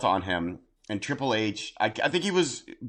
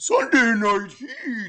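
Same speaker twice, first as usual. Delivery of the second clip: put-on sarcastic mocking voice, higher and louder; 12 semitones higher, 4 dB louder than usual. Showing how a show title reads: mocking SpongeBob meme voice. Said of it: "the sarcastic Scun-, SpongeBob, where he's like".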